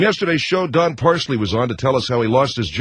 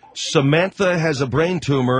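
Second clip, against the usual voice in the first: normal talking voice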